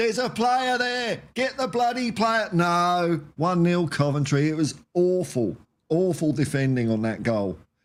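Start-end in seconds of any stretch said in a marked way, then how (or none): 0.0-2.5 loud, raised, high-pitched shouting. Recalling a goal conceded while the defenders were ball watching, the speaker retells a shout. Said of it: "I'm shouting, going".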